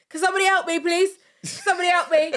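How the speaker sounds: mock frantic, panicked pleading voice, very high, rushed. Mimicking how the other speaker called for help in Tesco: imitating panicked pleading. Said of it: "it wasn't calm. I could hear it in your voice".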